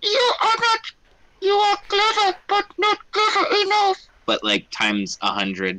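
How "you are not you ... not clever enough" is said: very high, squeaky, gross rat and mouse chorus. Showing how the voices from the rats would sound: a chorus of gross mouse voices. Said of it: "like multiple little like gross mouse voices".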